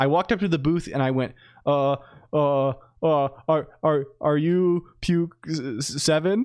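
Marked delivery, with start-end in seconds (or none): 1.7-6.5 mock very slow, fumbling, awkward, drawn-out stammer. Retelling meeting someone at a booth: imitating own awkward stammering. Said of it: "I extremely awkwardly was like".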